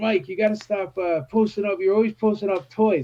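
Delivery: put-on New Zealand accent, straight, plain delivery. Retelling what Daniel Logan told him, Daniel Logan impression. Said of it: "the New Zealand accent".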